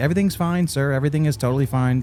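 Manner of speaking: smiling customer-service voice. Retelling what the gate agent said: imitating an attendant's smiling voice. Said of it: "talking to me with the attendant smile".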